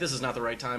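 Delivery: normal talking voice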